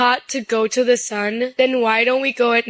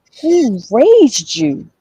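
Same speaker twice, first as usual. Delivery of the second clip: loud, belted put-on voice with big swoops; 6 dB louder than usual. Asking someone who raised them, in a TK Kirkland voice. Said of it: "In my T K Kirkland voice".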